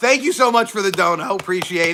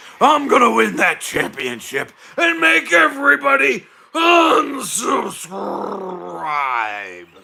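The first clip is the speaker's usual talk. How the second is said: very slow put-on character voice, words dragged out; 3 semitones higher, 3 dB louder than usual. Doing a promised voice of the unsubscriber character: unsubscriber character voice. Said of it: "my unsubscriber voice".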